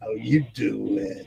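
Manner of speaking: very deep, low, rough, creaky sitcom-style character voice. Quoting a chat line imagined as said like Joey Tribbiani: Joey Tribbiani voice. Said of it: "[name] as Joey Tribbiani from Friends saying".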